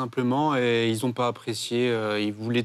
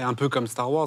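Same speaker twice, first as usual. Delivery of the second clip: usual speaking voice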